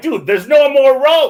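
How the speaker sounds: panicked shriek, very high and very loud. Passenger recounting a fast track lap that nearly crashed, retelling a scream. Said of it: "and I even screamed".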